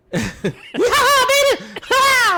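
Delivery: very high, loud, showy, swooping sing-song holler. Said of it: "That's [name]".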